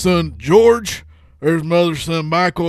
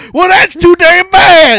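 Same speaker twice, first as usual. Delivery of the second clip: put-on very high, very loud Southern accent, old man voice; 13 semitones higher, 12 dB louder than usual. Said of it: "one of my favorite accents to do".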